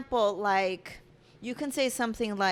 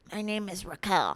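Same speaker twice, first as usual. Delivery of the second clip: fake masculine voice. Retelling a dance where a girl introduces herself, in a manly voice. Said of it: "so like a manly voice".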